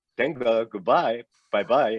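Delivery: put-on Israeli-accented speech. Retelling how a busy executive said goodbye after meetings: Chaim Saban's Israeli accent. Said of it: "'cause that's how he would say it".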